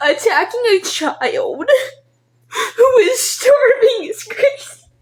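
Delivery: sobbing, very high-pitched, tearful crying speech. Talking about being unable to find work to feed the family: crying while talking. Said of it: "even though I'm already crying".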